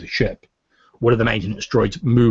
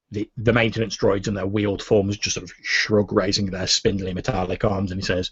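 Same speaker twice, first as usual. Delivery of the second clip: ordinary talk, nothing marked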